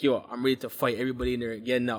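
normal talking voice

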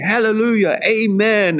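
very high congregational call-out, "amen" drawn out. Speaker retells people echoing a woman shouting like a preacher, imitating a crowd calling out. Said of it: "people were like saying".

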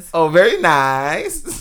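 poor, unconvincing put-on Kazakh accent. Speaker imitates Borat for others in the conversation, bad Borat impression. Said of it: "that was the worst Borat I've ever heard".

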